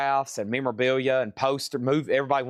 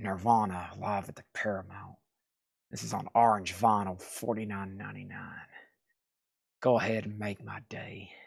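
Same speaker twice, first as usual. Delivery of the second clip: put-on gritted-teeth voice, quieter; 5 semitones lower, 7 dB quieter than usual. Speaker shows how a man talks all the time, imitating gritted-teeth talk. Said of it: "like he's gritting his teeth the whole time".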